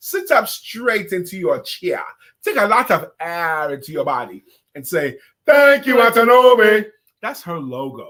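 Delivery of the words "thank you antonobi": very loud, high put-on Nigerian accent. Leading a group greeting, asking everyone to join in a Nigerian accent. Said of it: "Put on your Nigerian voice".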